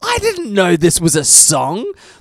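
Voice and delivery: loud, high, slow scream at full voice. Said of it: "I screamed at the top of my voice".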